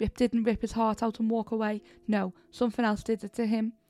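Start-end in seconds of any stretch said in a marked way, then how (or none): none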